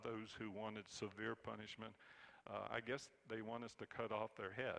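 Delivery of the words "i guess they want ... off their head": usual speaking voice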